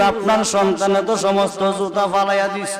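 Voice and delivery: ordinary talk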